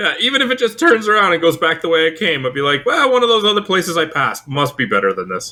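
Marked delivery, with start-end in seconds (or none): none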